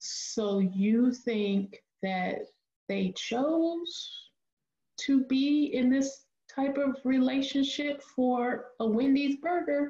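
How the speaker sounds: very slow, deliberate delivery with rising tone. Speaker acts out how she repeats someone's words back, very slowly. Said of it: "repeats back what they say very slowly".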